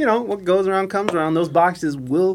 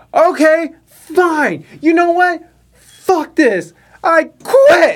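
put-on fed-up, furious yell, high and deliberate; 11 semitones higher, 7 dB louder than usual. Retelling quitting a job after being sent home: retelling an angry yell. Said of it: "when I yelled quit".

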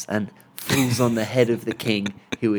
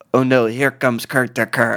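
terrible attempted French accent; 3 dB louder than usual. Quoting a game's French character speaking to an Irishman: terrible French accent. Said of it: "but this was the Frenchman".

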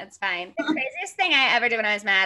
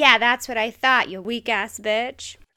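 ordinary delivery

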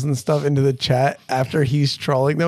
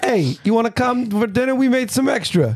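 friendly, tough-guy put-on New York accent, pitched up; 9 semitones higher than usual. Voicing the goblins again, speaking with a New York accent. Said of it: "All goblins are from New York".

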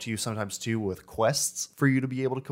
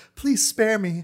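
mock terrified pleading, very high and loud; 10 semitones higher, 6 dB louder than usual. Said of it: "begging for their life or scared".

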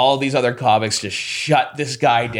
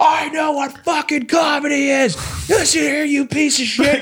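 mock very high, shrill, furious screaming; 13 semitones higher than usual. Retelling an argument about comedy, quoting a man screaming at him; imitating a man screaming. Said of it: "he's screaming at me".

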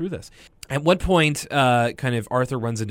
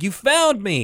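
acted-out overjoyed, elated, pitched-up delight; 9 semitones higher, 4 dB louder than usual. Retelling a cartoon scene where the dog is found: imitating Arthur sounding elated. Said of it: "Arthur's, like, elated".

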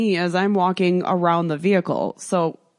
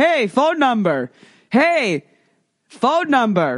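pushy, insistent, raised and pitched-up hollering; 5 semitones higher, 3 dB louder than usual. Telling how a man at the gate yelled for their phone number; retelling a man's yell. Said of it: "he starts yelling at me for my phone number".

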